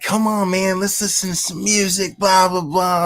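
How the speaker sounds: put-on obnoxious drunk voice. Retelling what a drunk older woman kept saying, imitating an obnoxious drunk. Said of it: "like really obnoxious".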